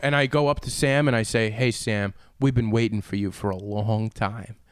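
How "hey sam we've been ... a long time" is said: unsettling, creepy tone. Retelling what they said to someone who then signed their ball: imitating own creepy greeting. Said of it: "Did you say it that creepy?".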